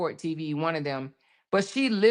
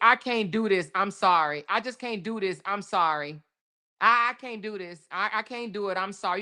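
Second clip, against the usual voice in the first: put-on begging tone, faltering, with stumbling repeats; 2 semitones higher than usual. Replaying the arrested woman's refusal to the officers: imitating her pleading. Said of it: "She says".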